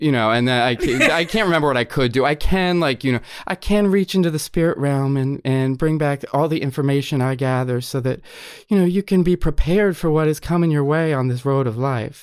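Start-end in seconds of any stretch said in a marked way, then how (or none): 2.2-12.2 put-on Southern accent, laid-on patter. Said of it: "It was sort of like that".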